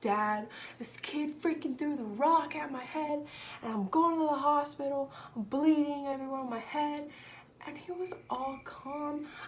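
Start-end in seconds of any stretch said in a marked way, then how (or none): 0.0-7.1 frantic, alarmed, panicked outpouring. Recalling calling her dad after a kid threw a rock at her head, retelling her own panic. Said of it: "I was like freaking out".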